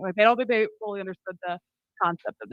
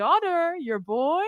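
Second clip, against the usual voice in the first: high, bad put-on Italian accent; 7 semitones higher than usual. Retelling what a watch store salesman kept saying: imitating a watch salesman's italian accent. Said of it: "That's not a really good Italian accent".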